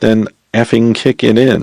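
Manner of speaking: plain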